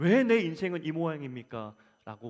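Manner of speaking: complaining, lamenting tone. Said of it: "원망하는 자리에".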